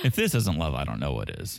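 thick mock-sincere sarcasm with sing-song swoops. Commenting on a couple letting each other back in: sarcastic. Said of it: "Are you being sarcastic".

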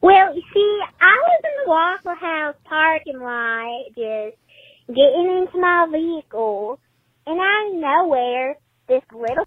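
very high, squeaky cartoon chipmunk voice. A caller recounts getting into a vehicle in a waffle house parking lot; chipmunk-like voice. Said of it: "sounds like Alvin the Chipmunk".

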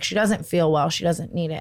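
usual speaking voice

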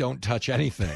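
mock clenched-teeth speech. Acting out a shopper facing high grocery prices, imitating clenched-teeth speech. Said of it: "saying through clenched teeth".

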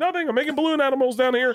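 high, fast, fake-innocent tone. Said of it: "And I'm like".

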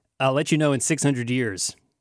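normal talking voice

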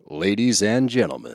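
hammy over-the-top promo announcer delivery. Recording a promo for the show, opening in an over-the-top promo announcer voice. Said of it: "What are you doing?".

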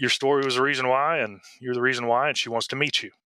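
normal talking voice

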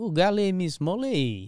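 put-on French accent. Trying out a phrase after saying it would be fun: put-on French accent. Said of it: "That's probably fun in a French accent".

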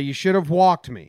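ordinary delivery

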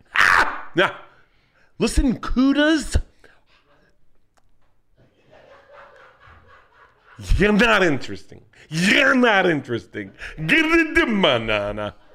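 slow, high, swooping, stretched sing-song put-on drawl. Showing another speaker an impression of D'Elia: Chris D'Elia impression. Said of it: "That's D'Elia".

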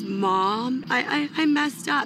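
put-on crying. A mother retells hearing her daughter's voice on the phone, imitating someone sobbing. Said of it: "and she's sobbing and crying".

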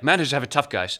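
put-on Dutch accent. Repeating what another speaker just said, do a Pep impression in a Dutch accent. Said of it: "That was Dutch, that accent I just did".

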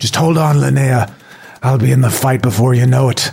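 put-on odd, strange Irish accent creeping in. A player voicing his character as he moves behind linnea, in a weird irish accent. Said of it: "he shakes off a weird Irish accent that came out".

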